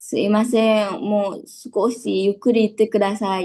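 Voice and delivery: pleading, pitiful, drawn-out tone.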